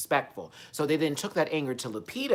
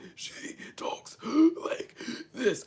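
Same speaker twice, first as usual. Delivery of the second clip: put-on voice catching its breath, gasping; 10 semitones higher than usual. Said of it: "she's trying to catch her air".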